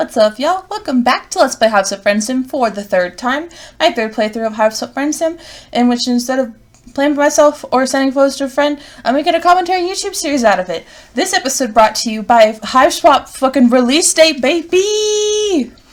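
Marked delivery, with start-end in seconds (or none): 11.1-15.6 loud, fired-up, excited hype yell. Opening an episode, announcing a game's release date: loud excited shout. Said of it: "Sorry if that was loud".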